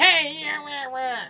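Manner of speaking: very high, very loud, slow, shrill whiny cartoon voice. Describing how a cartoon character sounds, imitating him: whiny Roger Klotz voice. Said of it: "it's that, like, whiny, like".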